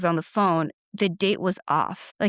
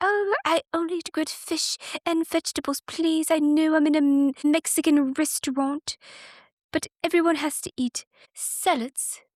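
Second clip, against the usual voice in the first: very high celebrity voice, all very high; 9 semitones higher than usual. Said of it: "I do a a mean [name]".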